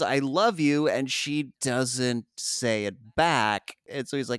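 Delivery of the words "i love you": ordinary talk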